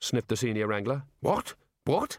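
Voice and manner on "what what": sharp, high, snapping delivery. The Dean reacts to the Senior Wrangler's refusal, snapping. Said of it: "Snapped the Dean".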